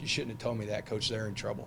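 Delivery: ordinary delivery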